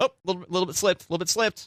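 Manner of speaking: high, quick startled squeak in mock panic. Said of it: "I'm like".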